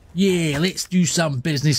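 put-on London Cockney accent. Playing a game, the speaker echoes a character's line in a Cockney accent. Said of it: "said in his Cockney accent".

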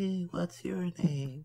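attempted yell that comes out very quiet. Retelling calling out to a tall figure in the distance, a very quiet yell. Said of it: "in my loudest voice, which is still very quiet".

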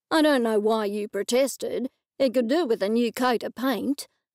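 usual speaking voice

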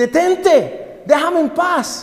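high, shouted, pleading scream.

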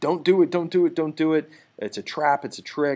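full-voice, high, loud scream. Retelling how Laocoon warns the Trojans about the horse: imitating someone screaming. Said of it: "he's screaming".

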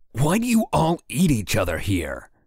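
high, swooping, exasperated-sounding yell. A man threatened by a succubus shouts a question at her, yelled. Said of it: "Crinnan yelled".

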